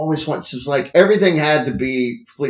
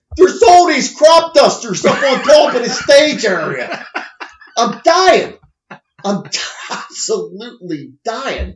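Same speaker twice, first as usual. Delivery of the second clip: put-on Pittsburgh accent, higher and louder; 9 semitones higher, 5 dB louder than usual. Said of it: "Pittsburgh accent".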